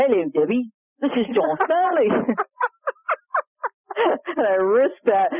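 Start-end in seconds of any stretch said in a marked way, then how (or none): 0.0-2.1 high-pitched, put-on Australian accent. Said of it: "that accent".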